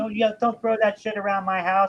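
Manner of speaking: high, hollered screaming. Retelling how a man screamed from his house at kids: imitating a man screaming. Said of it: "some guy screams out his house".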